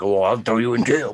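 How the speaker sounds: put-on aggressive, menacing cop voice. Telling of two officers, the speaker quotes the aggressive one: imitating an aggressive threatening officer. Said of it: "big and beefy and bucked up at me".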